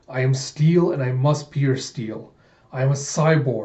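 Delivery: ordinary delivery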